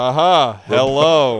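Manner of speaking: flat robot-like voice. Acting out a cloned Charlie stepping from the machine: robotic voice. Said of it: "robotic Charlie comes out from the cloning machine and goes".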